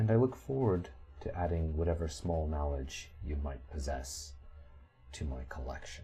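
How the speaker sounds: soft, half-whispered throughout. Speaking to visitors who want to get into the city, half-whispering. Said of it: "The Sphinx is whispering".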